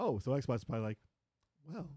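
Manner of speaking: usual speaking voice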